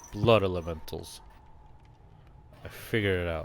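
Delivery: soft, private whisper under the breath. Voicing a character who figures something out: whispering under his breath. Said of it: "Tarsus is gonna whisper under his breath".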